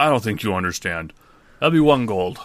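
plodding, flat, stubborn, literal-minded character voice. In a tabletop game, a half-orc answers the party at their table, half-orc character voice. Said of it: "a half-orc approaches your table and goes, / He cocks his head at you like a dog would".

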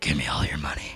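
whispered, deep, hushed, put-on robber man voice. Sneaking up close on him to pretend-rob him, in a really deep man voice. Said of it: "a really deep man voice".

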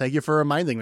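plain

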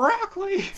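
mock, very high, squealing shriek.

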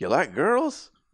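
put-on Texas accent. Retelling a man's question, the speaker imitates his Texas accent. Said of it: "He does his own Texas".

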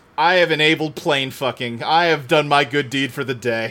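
ordinary talk, nothing marked

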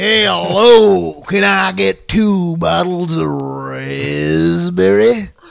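very loud, rough, creaky cartoony voice. Recalling a regular customer, the speaker imitates his Looney Tunes character voice. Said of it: "talked like a Looney Tunes character".

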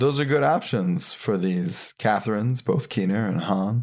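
polished, smooth news-anchor newscaster delivery. Suggesting movies to the other speaker, in a newscaster voice. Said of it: "That's my newscaster voice".

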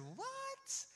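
stunned, very high, squeaky "what".

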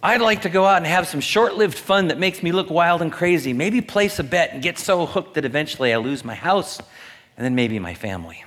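mock-eager sarcasm. After warning listeners that this is sarcasm, the speaker goes on: sarcastic. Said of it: "Just remember that this is sarcasm".

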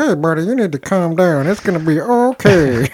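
slow, tiny, reasoning little character voice. Voicing an imagined talking penis: talking penis character voice. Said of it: "the little, like, mouth was just like".

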